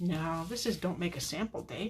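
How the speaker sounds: ordinary talk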